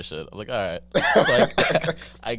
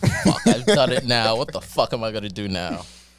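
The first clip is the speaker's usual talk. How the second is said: alarmed, frantic swearing, muttered to self in panic. Retelling being stranded at night with a dead phone: retelling own panic. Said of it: "I'm fucking panicking and shit".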